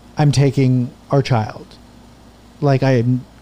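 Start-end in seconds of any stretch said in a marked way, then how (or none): none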